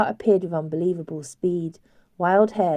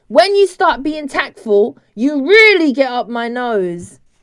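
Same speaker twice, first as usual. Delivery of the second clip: thick, very loud beastlike animal snarl; 8 semitones higher, 9 dB louder than usual. Reading a story aloud, the voice from upstairs snaps back: thick snarling animal voice. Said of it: "snarled the thick animal voice".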